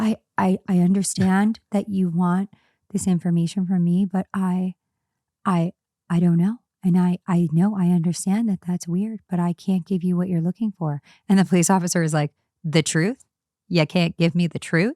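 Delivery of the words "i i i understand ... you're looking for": imitated gentle, soft, low voice. Speaker retells a man being interrogated by a police officer: imitating gentle, low speech. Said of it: "he's talking like really gentle and low".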